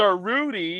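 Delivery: sarcasm laid on thick, dripping and heavy. Addressing someone by a title, dripping with sarcasm. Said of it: "Is it now dripping with enough sarcasm for you to understand the message".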